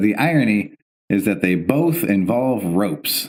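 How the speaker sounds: usual speaking voice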